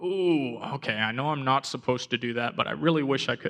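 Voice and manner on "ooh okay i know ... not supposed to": ordinary delivery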